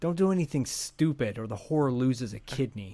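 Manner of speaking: mock angry tough-guy voice. Quoting a favorite line after Beeks finds out about the switch: imitating an angry Beeks. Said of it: "he gets all pissed off".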